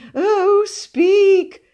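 shrill, very high, very loud begging plea. Narrator voicing Cousin Mildred in a story, pleading. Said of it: "pleaded Cousin Mildred".

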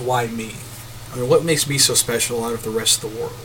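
ordinary talk

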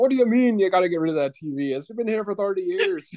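put-on Irish accent. Quoting what a very irish man would say, in an irish accent. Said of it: "Thank you for doing the accent".

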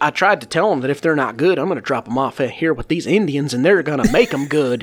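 put-on heavy, thick, laid-on Southern accent. Retelling what a man said in front of some kids, in a thick southern accent. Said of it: "thick Southern accent".

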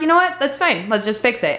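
normal talking voice

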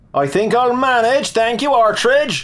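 derisive, scornful shout, high and rising pitch. The Inspector, climbing up on his own, answers Artridge: shouted back derisively. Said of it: "he shouted back derisively".

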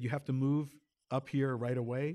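ordinary talk

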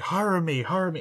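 mock high shrieking, repeated over and over. Describing a film scene of a man across from a baby, retelling a scream. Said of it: "he's just screaming".

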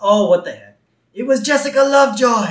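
put-on high, loud, blurted little-girl outburst. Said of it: "And Lisa says".

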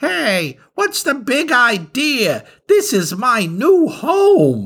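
tiny, squeaky, very high worm voice. Narrator reads the worm's line as Dermot goes to bite the apple, small worm voice. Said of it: "heard a small voice of a worm say".

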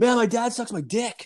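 shrill, very high shouted call. Retelling calling over to his boss, retelling yelling to his boss. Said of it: "I started yelling like over to my".

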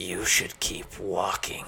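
hissing, menacing delivery. A man in an alleyway turns to Gene as he enters; hissed. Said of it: "he hissed".

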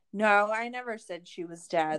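ordinary talk, nothing marked

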